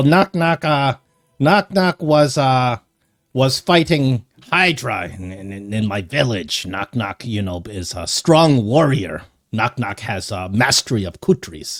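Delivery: slow, semi-feral goblin creature voice. Voicing a semi-feral goblin who brags about fighting a Hydra: semi-feral goblin voice. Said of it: "he's a semi-feral goblin".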